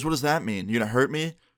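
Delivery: ordinary delivery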